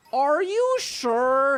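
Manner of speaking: high questioning tone, "sure" drawn out. Retelling a drive-thru order mix-up: imitating the drive-thru guy. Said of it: "he said it exactly like that".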